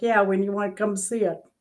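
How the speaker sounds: put-on heavy, thick, laid-on New Jersey accent. Retelling a call to the guy with a room for rent, thick Jersey accent. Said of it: "this guy with this thick Jersey accent".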